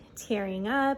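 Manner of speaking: normal talking voice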